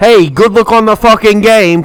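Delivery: put-on New York accent. Redoing a woman's good-luck wish for the game, in a New York accent. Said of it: "cause I'm from New York".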